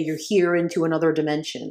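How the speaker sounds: ordinary talk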